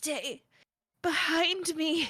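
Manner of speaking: very breathy, weak, high. Game narrator voicing Rosalind as she hangs on to Lawrence: very breathy voice. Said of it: "she says with a very breathy voice".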